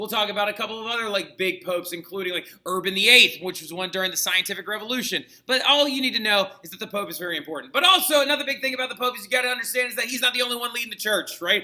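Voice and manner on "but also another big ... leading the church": rushed, rattled off at very high speed. Explaining the pope's role in the church to listeners: very, very fast. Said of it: "I know I said that very, very fast".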